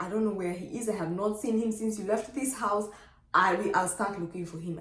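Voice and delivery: normal talking voice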